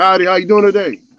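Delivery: very loud, booming cowboy voice. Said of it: "Homie sounded like, uh, Cowboy Curtis".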